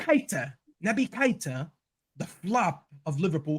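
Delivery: put-on English accent. Speaker naming a footballer during a discussion, in an english accent. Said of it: "Did you just do that in an English accent?".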